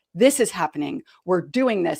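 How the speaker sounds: loud, firm, assertive, no-nonsense tone. Retelling giving orders to an aggressive team member: imitating own loud, firm voice. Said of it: "make my voice loud and firm".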